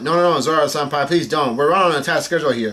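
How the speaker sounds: normal talking voice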